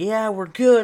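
high, loud screaming yell. Retelling answering a hard-of-hearing man while her mom slept nearby, retelling screaming at someone. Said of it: "I'm like screaming at him".

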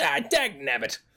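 small little gnome man character voice. Narrating a scene to the listeners, speaking as the character in a little gnome man voice. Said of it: "you see a little gnome man".

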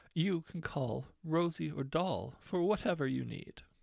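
haughty, superior tone. She mimics the listener back to them, haughty impression of you. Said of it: "growing more haughty".

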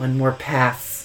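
weird, odd feminine-sounding voice. Speaker mocks the way he says this line in the scene: weird feminine voice. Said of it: "in the weirdest voice. It's very feminine".

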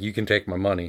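normal talking voice

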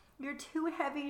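pleading. A woman hauling at a fallen man's shoulder, pleading. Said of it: "she pleaded".

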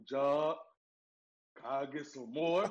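very slow, dragged-out, slow-motion delivery. Retelling how Joe asked for more snacks: imitating Joe's deep voice. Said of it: "you know Joe got that deep voice".

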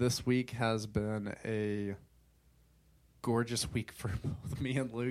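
slow, heavy sarcasm in every word. Describing a rough week to listeners, with heavy sarcasm. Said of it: "I said that with sarcasm in every cell of my being".

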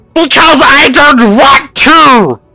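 shouting. The narrator voices a creature answering a player's yell, shouting back. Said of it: "It shouts back in common".

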